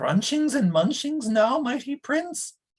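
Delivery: very high, small, tiny whimpering voice. Reading a story, Gurgi asks the mighty prince in a high, tiny whimper. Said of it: "Asked Gurgi in a high, tiny whimper".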